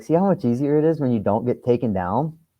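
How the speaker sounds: dry, needling sarcasm. Retelling what the coach said after a won match: imitating Simez's sarcasm. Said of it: "sarcastic individual".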